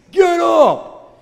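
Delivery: very loud, high-pitched drill-sergeant bark. Retelling a voice heard in the head after tripping: german drill instructor voice. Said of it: "It sounded like a German Jill instructor or something".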